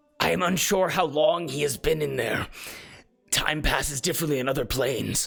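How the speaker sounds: voice heavy with pain, full of hurt. Voicing a character looking at the others: pained voice. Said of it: "he looks and says in a pained voice".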